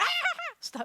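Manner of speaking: sudden, very high, shouted scream. Acting out a stoplight's red light to stop going: screaming. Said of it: "didn't mean to scream".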